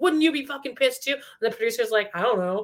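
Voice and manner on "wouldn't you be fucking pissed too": high, put-on angry yell, held in check. Recapping a man yelling at the producer, imitating someone yelling. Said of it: "he's yelling to the producer".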